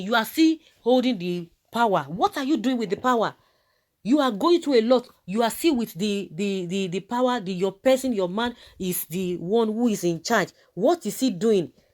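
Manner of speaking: demanding voice.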